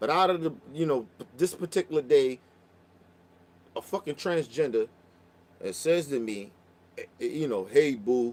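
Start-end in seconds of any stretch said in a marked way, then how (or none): 7.7-8.3 put-on very deep voice, lower. Retelling a stranger calling out on the street: imitating a very deep voice. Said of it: "Voice deep as shit, deeper than mine".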